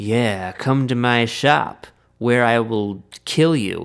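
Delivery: villainous, blatantly sinister and menacing tone. Retelling a scene where Sweeney Todd promises a customer a shave: obviously sinister Sweeney Todd voice. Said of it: "very sinister and obvious about it".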